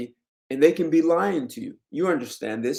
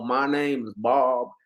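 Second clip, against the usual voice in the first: slow, put-on Southern US drawl. Demonstrating how accents show where people are from, in a Southern US accent. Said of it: "most likely I'm not from New York and I'm from the South".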